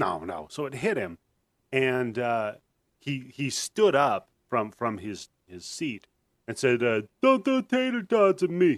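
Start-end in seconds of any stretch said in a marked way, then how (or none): 7.2-8.8 very high-pitched voice. Retelling what a classmate said after being hit: imitating Alfred's voice. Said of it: "He kinda talked like that".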